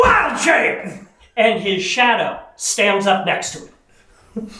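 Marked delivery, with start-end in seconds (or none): 0.0-0.9 very high, ringing shouted call. Player's druid character standing up to change shape, yelling. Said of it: "Blart stands up and he yells".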